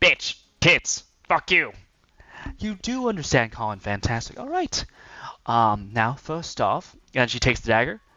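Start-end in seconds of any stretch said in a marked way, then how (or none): 0.0-1.7 goblin creature voice. Game master voices the goblin as it begins talking, in a goblin voice. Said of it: "the goblin begins to saying".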